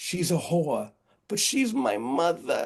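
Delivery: put-on very thick, swooping Boston accent, laid on heavy. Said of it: "in his very thick Boston accent".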